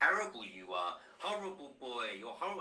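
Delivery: belittling, degrading, scornful scolding tone. Retelling what Nana said to his son: imitating someone screaming degradingly. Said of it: "of her degrading and screaming at my son".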